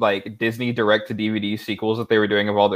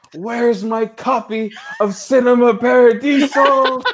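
very high, slow, drawn-out cry; 13 semitones higher, 4 dB louder than usual. Joking about the Civil War starting: pretend yelling into the air. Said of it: "I yell into the air".

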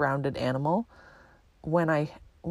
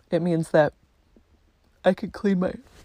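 speaking through a yawn, louder; 2 semitones higher, 6 dB louder than usual. Speaker explaining something, interrupted mid-sentence by a yawn. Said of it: "I'm yawning".

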